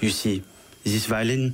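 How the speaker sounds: put-on French accent, storyteller voice. Retelling a story, quoting a man who turns around, put-on French accent. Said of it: "he wasn't French".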